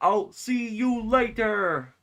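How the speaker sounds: very high, loud, slow, drawn-out voice. Imitating how Ray says his line in the game: imitating Ray's line delivery. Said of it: "the way Ray says it".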